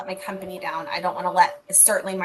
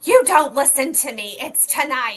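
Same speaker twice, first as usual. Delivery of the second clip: angry, cross delivery with raised pitch; 7 semitones higher, 6 dB louder than usual. Retelling what the daughter said in the car: imitating someone angry. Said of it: "just angry".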